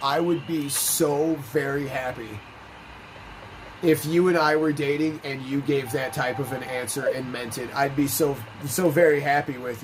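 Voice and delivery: ordinary talk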